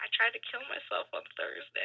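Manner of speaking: very hushed, very quiet half-whisper. Speaker retells what someone half-whispered in their ear during a hug, retelling a half-whisper. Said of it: "whispers in my ear".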